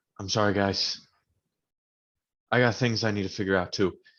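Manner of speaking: sincere, earnest, plain, genuine tone. Apologizing to the party in character, dropping the sarcasm: very genuine, sincere in character. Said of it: "I'm gonna be very genuine with you all".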